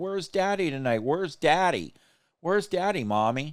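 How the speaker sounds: put-on high, tearful, pleading small child voice. Imagining the older child at home tonight asking for her father, imitating a crying child. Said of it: "She's probably sitting there crying, going".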